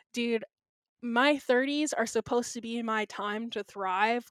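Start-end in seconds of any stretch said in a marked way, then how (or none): none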